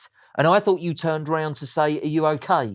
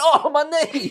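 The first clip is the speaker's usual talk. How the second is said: put-on, whiny, high, pained little exclamation; 11 semitones higher, 3 dB louder than usual. Recalling passing an old lady with a suitcase, the speaker acts out his own exclamation. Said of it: "And I just went".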